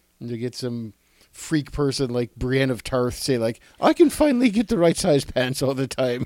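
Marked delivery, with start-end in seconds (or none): 3.8-6.3 high-pitched, loud little leprechaun voice. Imagining Brienne of Tarth reacting to the women's fashion, in a leprechaun voice.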